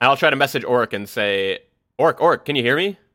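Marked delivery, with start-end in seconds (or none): 2.0-2.9 mild panic creeping into the voice. A player's character tries messaging Orc through a wall; a little panicked. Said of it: "in a little bit of panic".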